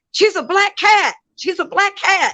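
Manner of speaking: shrill, very high-pitched screaming. Retelling how the sister's dad suddenly screamed: imitating someone screaming. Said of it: "So he screams out".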